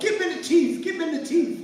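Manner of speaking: loud, excited fan yelling.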